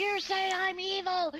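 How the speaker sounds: very high, very slow, drawn-out screech. Retelling how she started screaming in an argument: imitating someone screaming. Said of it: "She started screaming".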